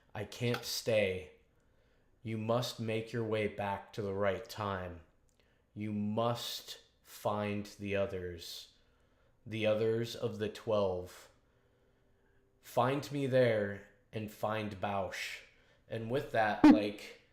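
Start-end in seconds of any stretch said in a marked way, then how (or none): 0.1-15.3 slow, very low, drawn-out intoning. Narrating a figure who stares someone down and speaks, slowly in a very low tone. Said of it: "slowly speaks in a very low tone".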